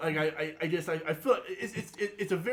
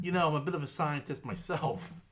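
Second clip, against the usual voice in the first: ordinary talk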